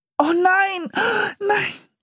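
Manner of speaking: very high, horrified scream. Narrator reads the siblings as the turkey catches fire, screaming in horror. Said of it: "schrien die Geschwister entsetzt".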